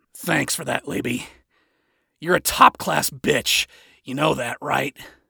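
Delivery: rough, gravelly voice. Narrator voices Adam speaking to Laby, in a gravelly voice. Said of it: "Adam said in a gravelly voice".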